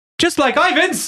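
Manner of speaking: put-on very high-pitched Kiwi New Zealand accent. Voicing a shopkeeper character who greets the party: Taika Waititi voice. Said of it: "A Kiwi! so it's Taika Waititi".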